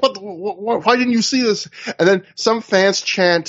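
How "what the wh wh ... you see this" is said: acted-out angry, heated, stammering, stumbling delivery. Retelling a wrestler chewing out someone: imitating someone yelling angrily. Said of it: "Aries really yells at him in a way that feels almost real angry".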